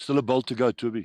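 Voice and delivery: very loud, high-pitched shout. Watching a match, calling out to the player: shouting. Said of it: "Sorry for shouting in your ears".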